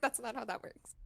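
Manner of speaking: ordinary talk, nothing marked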